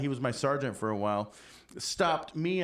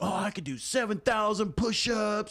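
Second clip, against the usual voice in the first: put-on, mock-angry voice; 7 semitones higher than usual. Retelling a push-up challenge between the listener's dad and Randy: imitating Randy, mock-angry. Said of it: "He's all angry and stuff".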